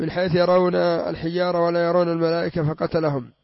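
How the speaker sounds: ordinary delivery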